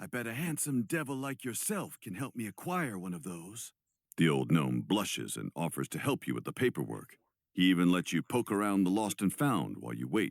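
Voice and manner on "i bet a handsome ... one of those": hushed, soft, high-pitched half-whisper. Leaning in close to the old gnome about a library card: half-whisper. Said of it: "you whisper".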